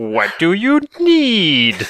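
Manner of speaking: very high sing-song character voice, need stretched. Talking about game voice acting, imitating the librarian from Symphony of the Night. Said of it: "the librarian, just like".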